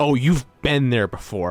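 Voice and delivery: ordinary talk, nothing marked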